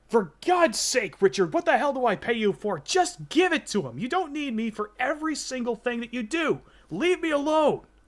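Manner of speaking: shrill, very high, fed-up angry yelling. Retelling what was yelled on the other end of the line: imitating James yelling. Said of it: "James yelling".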